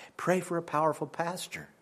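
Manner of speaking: soft, pointed, pleading whisper.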